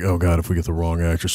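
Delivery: ordinary talk, nothing marked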